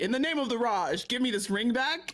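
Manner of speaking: grand, ringing, loud, high proclamation. Playing a scene, voicing a demand for the ring back: loud declaration. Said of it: "Maybe not that loud".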